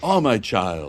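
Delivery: condescending yet kind, sympathetic professor-like voice. Recalling a character's voice for others: imitating Doctor Brackman's condescending professor voice. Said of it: "Like this, right?".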